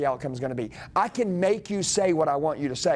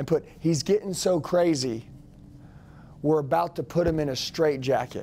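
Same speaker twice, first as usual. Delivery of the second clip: plain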